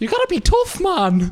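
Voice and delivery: put-on pitched way up, faint Irish accent. Quoting a public figure on being tough: Jordan Peterson impression. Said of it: "you have Jordan Peterson going".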